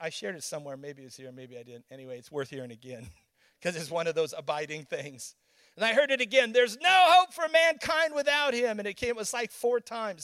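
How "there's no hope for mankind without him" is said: thunderous, loud, booming, clipped authoritative voice. Recounting words that came to him four times, retelling a thunderous voice. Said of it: "thunderous sounding".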